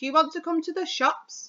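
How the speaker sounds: rising question tune with pitch lifted on shops. Teaching how to ask questions in a speech, rising pitch at the end. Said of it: "the last word should be a little bit higher".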